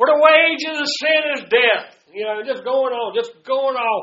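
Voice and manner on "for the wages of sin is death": loud mocking reading voice, much higher. Retelling how a man read scripture mockingly, retelling a loud mocking reading. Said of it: "just loud".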